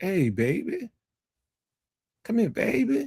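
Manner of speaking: very high, sultry, seductive voice. Describing how New Orleans women talk; imitating a seductive New Orleans woman. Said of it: "New Orleans women women talk that will seduce you".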